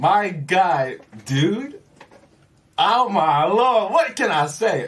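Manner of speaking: very excited. Answering how they're doing at the start of a radio interview: very excited. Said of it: "I'm too excited right now".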